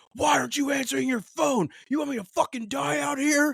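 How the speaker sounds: shrill, very high, frantic, panicked screaming. Retelling a kid's panicked phone call: imitating someone screaming. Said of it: "screaming into the phone".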